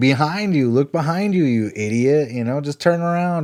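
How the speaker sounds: high, jeering, mocking heckling yell. Retelling a movie scene where a drunk girl mocks the screen: imitating someone mockingly yelling at TV. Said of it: "kinda making fun of the scene".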